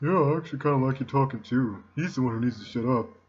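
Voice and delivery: gloomy, dejected, mopey depressed voice. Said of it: "He kind of talks like me. He's got this depressed voice".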